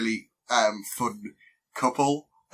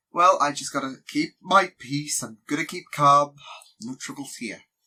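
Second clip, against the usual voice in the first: smooth, calm, easygoing, unbothered and innocent voice; 3 semitones higher than usual. Imitating a calm, innocent show character: smooth, innocent voice. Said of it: "He's got that smooth voice".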